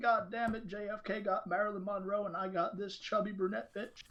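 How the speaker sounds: put-on smooth Southern man's voice. Speaker imagines what the saxophone-playing man was thinking: smooth Southern man's voice. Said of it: "smooth man from the South that can talk like that".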